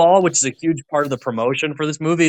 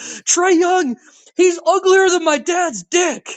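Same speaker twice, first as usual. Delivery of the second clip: very high, drawn-out, top-of-lungs scream. Retelling a fan's line from a video: imitating someone screaming. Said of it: "he literally screams at the top of his lungs".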